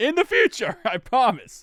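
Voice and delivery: high-pitched voice cracking and breaking mid-line. Talking through a player's rushing yards when his voice cracks. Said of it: "My voice crack".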